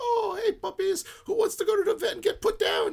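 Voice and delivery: very high, bright, sunny, happy pet-talk voice. Retelling what is said to the dogs to horrify people: happy voice to dogs. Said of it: "any happy voice".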